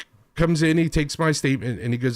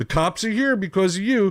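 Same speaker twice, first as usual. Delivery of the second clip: acted-out blaming call, yelled as if down a hallway; 3 semitones higher than usual. Retelling what the owner's husband yelled down the hallway: imitating someone yelling. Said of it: "yelling this as he's walking down the hallway".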